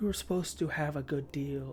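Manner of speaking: voice gone dark and shadowed. A character speaks again in a darker, deeper voice. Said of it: "like deeper again".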